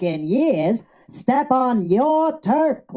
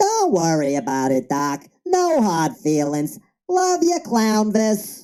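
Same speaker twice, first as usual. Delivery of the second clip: put-on cartoon rabbit character voice; 4 semitones lower than usual. Making up after storming off: Bugs Bunny voice. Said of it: "Bugs Bunny, don't be mad, man".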